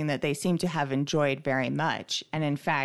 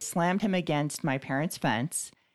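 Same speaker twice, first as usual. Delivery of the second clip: normal talking voice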